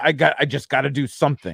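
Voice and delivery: ordinary talk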